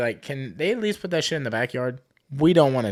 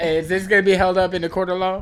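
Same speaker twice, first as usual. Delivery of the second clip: nervous, jittery, uneasy, pitched up; 5 semitones higher than usual. Imitating another speaker answering questions: imitating someone nervous. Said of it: "You're, like, nervous with the questions".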